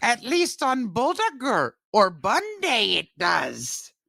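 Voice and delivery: deliberately bad high puppet voice. Joking with the other speaker about whether Yoda wrote the article, do an awful Yoda impression. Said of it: "That's my awful Yoda impression".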